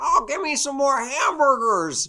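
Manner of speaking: very high, loud, slow, drawn-out holler. Acting out a character always asking for food: Wimpy impression. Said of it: "this perfect spot-on impression".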